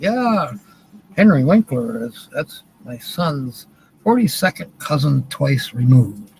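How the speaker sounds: ordinary talk, nothing marked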